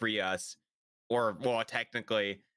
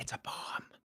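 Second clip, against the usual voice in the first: hushed, very quiet whisper, right in the ear. Retelling what she says in your ear: imitating a whisper. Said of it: "whispers in, in your ear".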